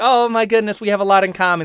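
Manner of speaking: put-on high-pitched Boston accent voice. Speaker imagines a girl you've been texting, doing a put-on boston accent. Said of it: "is like the Boston accent".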